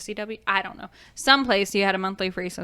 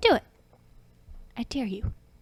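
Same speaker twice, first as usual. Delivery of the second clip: mock little girl voice, getting serious; 3 semitones higher than usual. Quoting an audio clip from a cartoon: imitating a serious little girl voice. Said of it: "this little girl voice, and she gets real serious".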